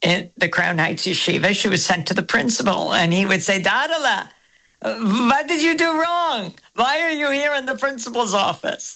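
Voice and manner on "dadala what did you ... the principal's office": put-on Yiddish accent in an old man's voice. As Zadi the rabbi and principal, questioning a girl sent to his office, in a Zadi accent. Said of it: "Very good Zadi accent".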